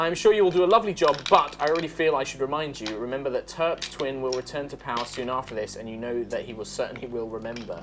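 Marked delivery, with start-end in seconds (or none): none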